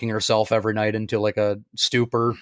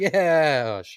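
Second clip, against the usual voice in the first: flat, unexcited put-on voice, higher pitch; 4 semitones higher than usual. Retelling how John Walker delivered a line: unexcited John Walker delivery. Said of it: "wasn't even, like, super excited".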